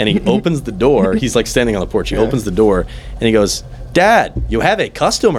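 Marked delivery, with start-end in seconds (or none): 3.9-5.4 very high, swooping video game character voice. Retelling how someone at the door called his dad; video game character voice. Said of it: "Did he talk like a video game character?".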